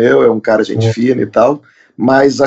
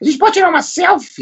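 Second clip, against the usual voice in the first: put-on old woman voice, higher. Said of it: "gostei da voz de velha".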